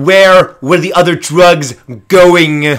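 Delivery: very loud, high, demanding, belted out. Trying out different voices, the speaker repeats the question as a John Malkovich impression.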